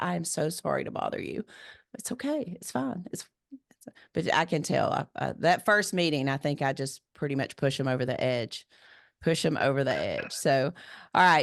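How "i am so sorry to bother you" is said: put-on apologetic tone, quieter. Retelling a man calling at seven on Friday night, imitating an apologetic caller. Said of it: "like they really hate to bother you".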